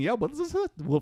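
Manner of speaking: high, mock puzzled, confused-sounding voice.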